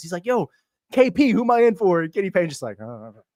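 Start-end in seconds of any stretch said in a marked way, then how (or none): 0.2-2.0 mock urgent, loud, high, drawn-out yell. Retelling how a player asked the closest coach who he was in for, imitating someone yelling. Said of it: "he's like yelling at Kenny Payne".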